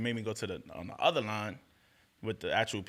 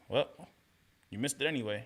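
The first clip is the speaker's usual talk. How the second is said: put-on nonchalant, casual, offhand tone; 2 semitones higher than usual. Retelling what the help desk agent said: imitating a nonchalant agent. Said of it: "he's so nonchalant about it".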